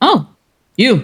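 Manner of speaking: rough-edged, no-nonsense, just short of harsh. Trying out the laundry woman's voice for the others: almost gruff laundry woman voice. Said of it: "almost, but not quite gruff voice".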